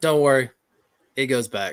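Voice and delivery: put-on bone-dry, matter-of-fact deadpan delivery. Retelling a Navy doctor's reply while his wife was screaming, retelling a deadpan reply. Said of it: "he looks at me deadpan and goes".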